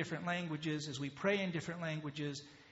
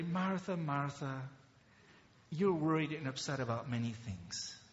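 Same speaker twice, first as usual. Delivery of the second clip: acted-out, tender speaking voice; 2 semitones lower than usual. Telling listeners how Jesus spoke to Martha, acting out his words as someone speaking tenderly. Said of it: "he spoke to her so tenderly".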